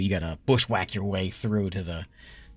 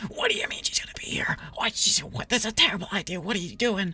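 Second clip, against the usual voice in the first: loud, hushed whisper; 12 semitones higher than usual. Voicing two characters arguing while trying to stay quiet: loud whisper. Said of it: "trying to be quiet, but very loud whispers".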